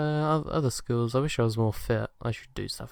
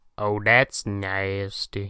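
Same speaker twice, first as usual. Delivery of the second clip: loud, raised, put-on cartoon voice; 3 semitones lower, 5 dB louder than usual. Asked which accent you would fake, try a Cleveland Brown impression. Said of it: "I can sort of do Cleveland Brown".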